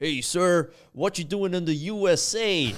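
put-on American accent, very loud and high. Retelling a border patrol check, the speaker imitates the agent's put-on american accent. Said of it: "That accent work is incredible".

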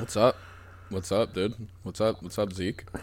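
fake, low, soft, sick-sounding voice. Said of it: "You sound kinda weird".

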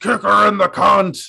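loud, high-pitched screaming. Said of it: "he screams".

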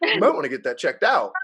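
loud, play-acted casual, offhand, nonchalant tone. Retelling what the hygienist said about the blood pressure: imitating a nonchalant remark. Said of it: "so nonchalant".

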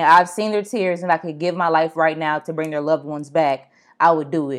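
normal talking voice

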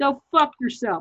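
furious, angry, dismissive brush-off tone. Retelling a reply to a friendly message, imitating someone angry. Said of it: "she was so angry at me".

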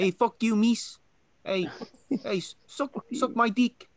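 imitated New Zealand accent. Praising the New Zealand accent, then doing it: New Zealand accent impression. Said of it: "I like the New Zealand accent".

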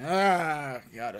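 low, deep voice with a long, drawn-out Ah. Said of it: "Vin Diesel noises".

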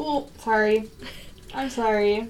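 very slow, tearful, crying through the words. Reacting to upsetting news from another speaker, crying while talking. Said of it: "I don't mean to cry on the goddamn podcast".

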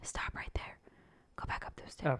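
hushed, whispered masculine voice. Recreating a voice the others described as manly: masculine whisper. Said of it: "I should have whispered it".

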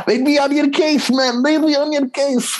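put-on very high-pitched, botched Scouse accent. Retelling what a guy said while stumbling for words: bad scouse accent. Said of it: "that was a shitty scouse accent".

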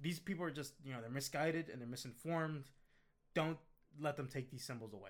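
plain

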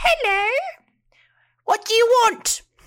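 shrill, squeaky, very high, very loud gnome voice. Voicing a gnome the players meet at a counter, gnome voice. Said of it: "Let me do a gnome voice".

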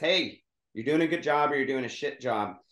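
ordinary delivery

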